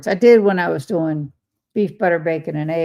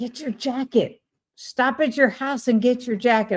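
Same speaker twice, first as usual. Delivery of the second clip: put-on near yell, higher pitch; 7 semitones higher than usual. Retelling watching a video, imitating almost yelling at the tv. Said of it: "I'm almost yelling at the T V".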